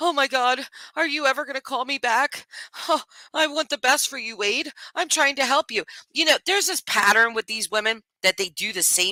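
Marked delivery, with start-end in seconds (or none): 0.0-5.8 mock very high, tearful, sobbing crying plea. Retelling a prison phone call, imitating Shannon crying. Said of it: "She's crying".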